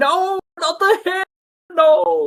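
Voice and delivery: very high, drawn-out panicked screaming. Narrator voices a man burned with a lighter, panicked screaming. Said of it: "and he starts screaming".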